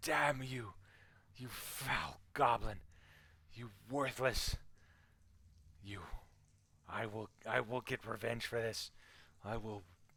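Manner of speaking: loud, pain-wracked, furiously spat-out fury. Voicing a wounded woman shot with bolts, cursing the goblin: in pain, spitting fury. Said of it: "she cries out in pain".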